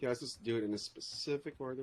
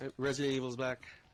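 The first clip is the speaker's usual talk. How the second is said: ordinary talk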